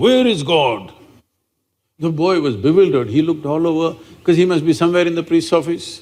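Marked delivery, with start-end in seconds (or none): 0.0-0.9 sudden, abrupt, mildly booming mock voice. Telling a joke, voicing a priest questioning a little boy: booming voice. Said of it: "suddenly with a booming voice he asked".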